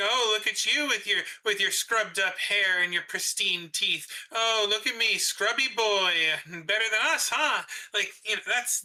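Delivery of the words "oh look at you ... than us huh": put-on derogatory, mocking, taunting tone. Acting out how mortals would insult immortals: imitating a derogatory taunt. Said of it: "it's derogatory, but it's like".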